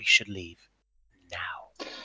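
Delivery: very quiet, very soft, hushed words. Voicing a character who turns to a companion: said very quietly. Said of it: "very quietly is like".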